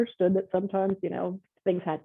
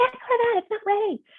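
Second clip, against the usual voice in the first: mock, very high, stressed-out screaming. Describing a live hour on air with a screaming producer, the speaker acts out screaming back. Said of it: "you're screaming".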